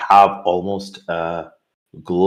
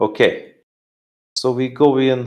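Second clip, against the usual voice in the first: put-on Russian accent, pitched up, slow; 5 semitones higher than usual. [name] stops, looks back at the group, and speaks: [name]'s Russian accent. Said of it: "Russian accent back".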